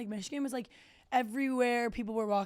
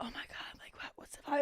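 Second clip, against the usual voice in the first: tiptoe-quiet, hushed, breathy whisper; 4 semitones higher, 7 dB quieter than usual. Retelling walking into a tense game-watching party: imitating whispering. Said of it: "talking like this".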